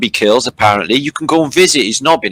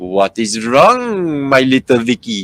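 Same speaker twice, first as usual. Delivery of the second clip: fake put-on French accent. Retelling a story, voicing Prince Albert in a fake French accent. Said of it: "that's French".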